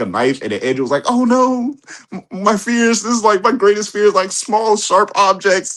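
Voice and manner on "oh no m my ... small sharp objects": put-on trembling scared voice, pitched higher. Retelling a Spider-Man movie scene to friends: imitating Andrew Garfield trembling in fear. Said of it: "And he was just trembling".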